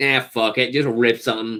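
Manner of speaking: ordinary delivery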